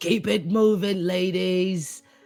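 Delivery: big beefy tough ladybug character voice. Voicing a big beefy ladybug leading the others: big beefy ladybug voice. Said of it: "one big beefy one comes down and goes".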